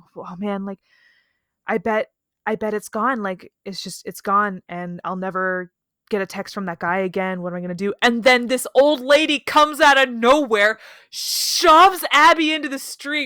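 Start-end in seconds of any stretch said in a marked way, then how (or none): 0.2-8.0 put-on dejected, very bummed tone. Retelling a story, voicing someone who thinks her phone is lost, imitating someone super bummed. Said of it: "she's like super bummed about it".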